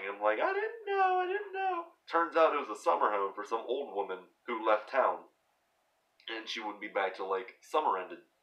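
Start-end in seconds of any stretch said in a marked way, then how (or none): 0.4-1.8 acted-out sobbing, very high, teary and pleading. Retelling being scolded by mom over the broken windows: imitating own past crying. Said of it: "And I'm in tears. I'm crying".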